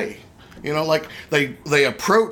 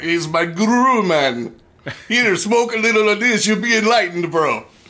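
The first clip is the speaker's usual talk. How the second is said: badly done, off-the-mark put-on Caribbean accent; 4 semitones higher, 3 dB louder than usual. Riffing on how the word guru sounds Caribbean: bad Caribbean accent. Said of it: "your Caribbean accent leaves a lot to be desired".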